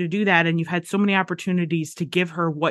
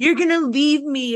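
put-on petulant child voice, higher; 8 semitones higher than usual. Mocking a TV character's line: imitating Dawson as a petulant child. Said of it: "acting like a petulant child".

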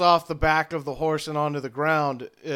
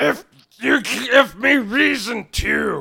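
gurgling orc monster voice, higher; 7 semitones higher, 5 dB louder than usual. The narrator voices an orc answering a player's question, in a gurgling orc voice. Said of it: "he just gurgles out".

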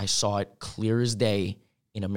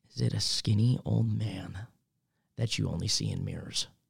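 quiet, softly spoken; 4 dB quieter than usual. Retelling what she came up and asked him, said quietly. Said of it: "quietly goes".

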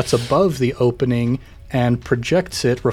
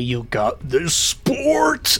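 slow, drawn-out, hulking ape voice. Player's character tries again to force the opening: deep ape voice. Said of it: "my voice gets deeper as I turn into an ape".

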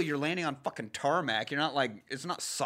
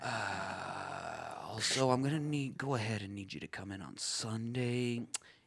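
low, soft, slow monotone drone. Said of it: "do Lumberg while you do that".

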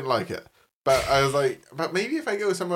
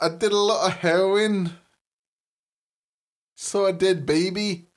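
high-pitched put-on Scottish accent; 5 semitones higher than usual. Trying Scottish accents again, the speaker slides into a Fat Bastard impression. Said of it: "doing Fat Bastard now".

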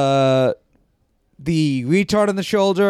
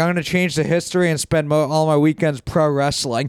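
ordinary talk, nothing marked

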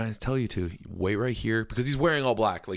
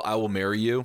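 ordinary talk

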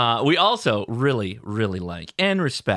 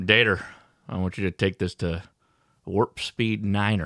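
put-on rural southern US voice, lower pitch; 3 semitones lower than usual. Giving starship orders to Dater, joking: redneck Picard voice. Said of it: "It's redneck Picard is what".

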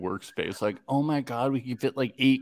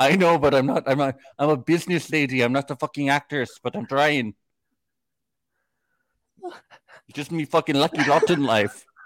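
put-on Irish leprechaun accent; 4 semitones higher than usual. Retelling what a woman said while doing a fake Irish leprechaun accent. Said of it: "You're doing a leprechaun".

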